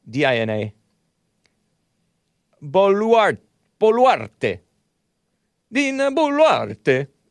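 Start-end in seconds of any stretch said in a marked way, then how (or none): 2.6-7.1 mock Italian pronunciation of a name, high and drawn-out. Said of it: "why am I saying it like a, like it's, uh, Italian?".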